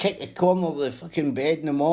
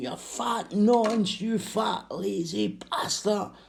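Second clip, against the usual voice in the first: put-on shouting and screaming; 6 semitones higher than usual. Retelling how her son yelled insults each morning: imitating someone shouting and screaming. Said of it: "her son shouting and screaming".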